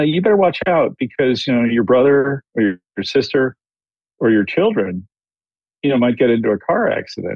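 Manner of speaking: ordinary talk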